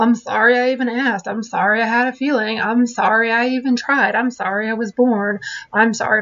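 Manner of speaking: put-on sarcastic, dramatic tone. Showing what to avoid when apologizing: imitating a sarcastic, dramatic apology. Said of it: "no sarcastic apologies or no dramatic apologies".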